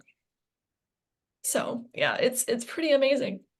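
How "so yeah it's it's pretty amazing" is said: choked up, tearful, barely above a whisper. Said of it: "I'm gonna get choked up".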